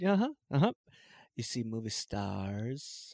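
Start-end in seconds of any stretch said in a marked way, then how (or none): 1.4-3.1 put-on dainty man's voice, quieter. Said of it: "He made him kinda sound like Tommy Wiseau".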